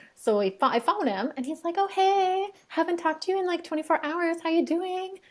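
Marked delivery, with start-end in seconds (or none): 1.8-5.1 breezy, chipper, cheerful high-pitched voice. Recounting phoning him from the car and quoting his reply: mimicking a cheerful greeting. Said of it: "this is not a cheerful conversation".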